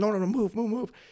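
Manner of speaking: put-on shouting. Retelling yelling at people who went where they were told not to, retelling a yell. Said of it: "I'm like yelling at them".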